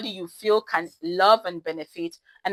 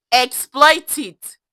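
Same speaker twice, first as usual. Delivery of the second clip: high, full-on, worked-up shout; 5 semitones higher, 8 dB louder than usual. Answering his own question to listeners, repeating the advice, shouting. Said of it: "I'm shouting now".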